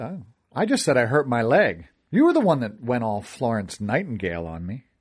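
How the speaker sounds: ordinary delivery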